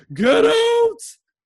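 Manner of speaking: screaming, very high pitch and very loud. Retelling a character screaming at someone to get out: imitating someone screaming. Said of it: "just screaming at him to get out".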